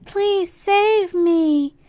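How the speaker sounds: put-on squeaky small child's voice. Describing a show's voice acting, quoting the little kid in a high-pitched little kid voice. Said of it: "it was a much higher uh, pitched voice".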